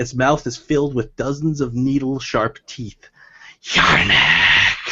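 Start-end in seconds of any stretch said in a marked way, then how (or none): 3.6-4.9 low, monstrous hissing like a creature. Voicing a monster that leaps from the doorway: hissing. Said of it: "it hisses".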